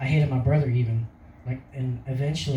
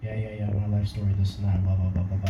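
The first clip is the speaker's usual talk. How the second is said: mock gloomy, flat, droning monotone, lower; 5 semitones lower than usual. Retelling how he talked to a friend on a car ride, gloomy monotone. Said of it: "Just so monotone the whole time".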